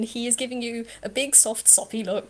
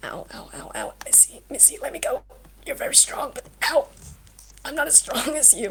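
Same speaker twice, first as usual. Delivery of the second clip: barely audible, very quiet, hushed voice; 4 semitones higher than usual. Voicing a brother who is being squeezed too hard: speaking very quietly. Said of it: "you hear just very quietly".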